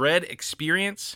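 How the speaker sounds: DREAD leaned on hard.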